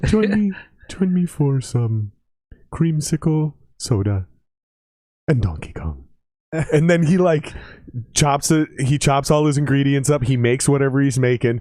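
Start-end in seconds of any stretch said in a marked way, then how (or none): 0.0-6.0 imitated soft-spoken, quiet manner of speaking. Describing a TikTok creator's video intro, imitating soft-spoken talk. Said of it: "he talks really softly".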